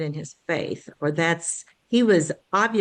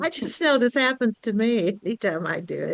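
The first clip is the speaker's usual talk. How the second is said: speaking through laughter, higher pitch; 4 semitones higher than usual. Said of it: "Melanie, stop laughing at me".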